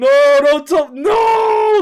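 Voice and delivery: mock very loud, high, drawn-out shriek through laughter. Recounting a story with his friend, the speaker re-enacts his own scream of laughter. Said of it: "I'm screaming".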